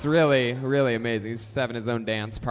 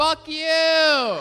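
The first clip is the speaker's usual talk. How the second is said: put-on shrill, high-pitched rowdy kid yell, "you" drawn out; 6 dB louder than usual. Telling a new teacher what the kids will shout, imitating kids yelling. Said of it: "That's what the kids are going to yell at you".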